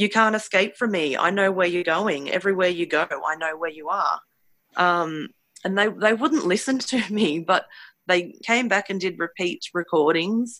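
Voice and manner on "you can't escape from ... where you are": put-on mocking, laughing taunting voice. Speaker voicing what they heard him say to them, acting out a mocking taunt. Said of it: "I can literally hear him mocking you, laughing".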